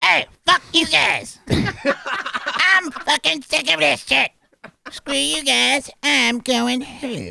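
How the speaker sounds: very high-pitched put-on character voice. Performing lines after another speaker calls out Cartman: Cartman voice.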